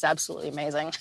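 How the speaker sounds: soft, choked up, close to tears. Describing welcoming newborns and helping with their first meal, tearing up. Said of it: "I'm tearing up".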